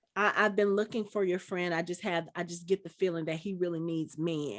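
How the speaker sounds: normal talking voice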